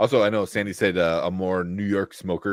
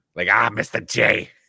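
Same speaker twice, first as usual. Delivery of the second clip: raspy, rough voice with a New York accent; 2 semitones higher, 4 dB louder than usual. The speaker says he'd like to see a New Yorker and demonstrates: raspy New Yorker voice. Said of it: "a New Yorker like with the b- raspy voice".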